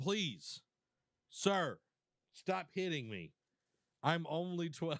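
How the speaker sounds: mock pleading, slow and drawn-out begging. Acting out a beaten youth in a fight: imitating a begging youth. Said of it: "When they're begging, like".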